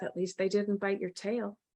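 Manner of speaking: low half-whisper under the breath, barely audible. Voicing a character passing another character, half-whispering under breath. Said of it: "I kind of whisper under my breath".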